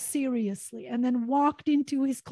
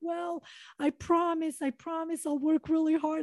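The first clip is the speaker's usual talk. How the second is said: earnest, desperate, pleading voice; 4 semitones higher, 4 dB quieter than usual. Retelling begging a man to allow them into his class, acting out past pleading. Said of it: "I'm literally pleading at this point".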